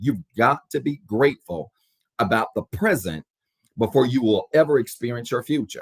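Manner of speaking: slow, spaced-out delivery with pauses between phrases.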